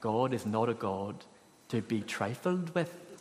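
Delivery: put-on low, soft voice in a Northern Irish accent. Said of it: "in his brilliant Northern Irish accent".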